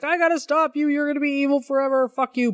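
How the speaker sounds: put-on high, furious, raging, losing-it outburst. Retelling a fight where Superboy beats Luthor; imitating Superboy's furious outburst. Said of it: "he just like loses his shit".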